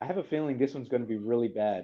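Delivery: ordinary delivery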